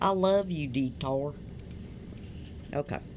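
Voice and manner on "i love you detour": weak, put-on American Southern accent. A presenter talks about the detour bar to a co-host, in a put-on southern accent. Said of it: "That was my southern accent".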